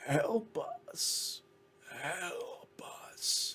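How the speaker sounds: choked, strangled, muffled, slow whisper. Narrator voicing cries heard from somewhere above, strangled, muffled voice. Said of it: "voice kind of sounds a little strangled and muffled".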